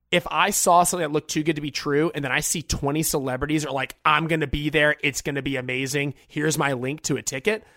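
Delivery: ordinary talk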